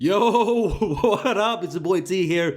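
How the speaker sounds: giggly words breaking up with laughter. Host opening a video after reading its title, laughing while talking. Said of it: "sorry, I'm laughing".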